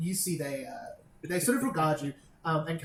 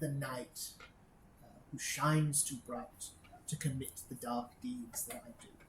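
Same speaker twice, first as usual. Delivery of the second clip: hushed, lowered, half-whispered voice; 3 semitones lower, 9 dB quieter than usual. A character looks to another, leans in a little and speaks in a lowered voice. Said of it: "leans in a little and lowers her voice".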